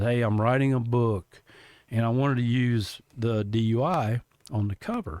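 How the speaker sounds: usual speaking voice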